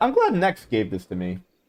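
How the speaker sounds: voice cracking. Gamer commenting on a new mount while playing, voice cracking. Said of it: "Did my voice just crack there?".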